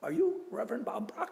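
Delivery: put-on heavy Spanish accent.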